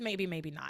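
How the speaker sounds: very aloof, elusive, evasive brush-off tone. Recapping how a character answers questions: imitating an elusive, aloof voice. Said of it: "in this very, like, elusive, aloof voice".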